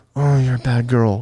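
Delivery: flat, slow, low-effort deadpan delivery. Retelling a line said without effort: imitating own effortless delivery. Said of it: "I'm not putting an effort".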